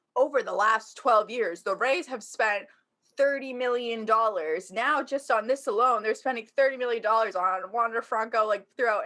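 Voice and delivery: ordinary talk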